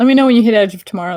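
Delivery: fast, loud, rushed speech. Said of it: "I'm talking too fast".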